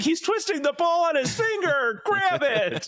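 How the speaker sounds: very high, stretched-out screaming. Retelling a Simpsons scene where Krusty bets against the Globetrotters: imitating Krusty screaming. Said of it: "he's just screaming at the T V".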